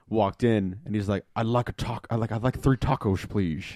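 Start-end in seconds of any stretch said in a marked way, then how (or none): 1.3-3.6 put-on polite, courteous tone in a Scottish accent. Retelling what a Scottish customer ordered at Taco Bell: Scottish accent. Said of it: "just Sean Connery man".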